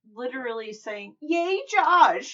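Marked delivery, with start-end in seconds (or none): 1.3-2.4 loud, high-pitched, enthusiastic cheering voice. Describing a mom at her son's game, imitating a cheering mom. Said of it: "in that voice".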